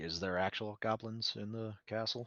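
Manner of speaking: very quiet, hushed voice. Mirabelle and Harry ask a question after the drunk is passed off, lower voice. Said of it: "say in a lower voice".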